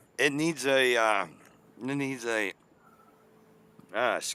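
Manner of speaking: slow, halting, choking start with coughing. Talking about a broken car while smoking weed: choking on smoke mid-sentence. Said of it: "I'm choking on my weed".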